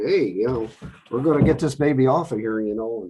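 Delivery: put-on, straight-up Wisconsin accent. Acting out the driver who delivered a new Oshkosh Striker from Wisconsin, straight-up Wisconsin accent. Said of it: "he was straight up Wisconsin".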